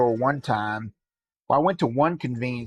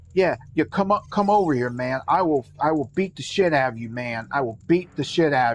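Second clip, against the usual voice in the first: put-on man's voice, extremely loud; 2 semitones higher than usual. Retelling a stranger in a store line on his phone: imitating a man being extremely loud. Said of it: "He's being extremely loud".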